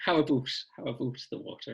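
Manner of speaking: terrible put-on Canadian accent, mocking. Teasing the other speaker by copying their canadian accent, in a mock canadian accent. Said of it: "taking the Mickey out of your Canadian accent's terrible".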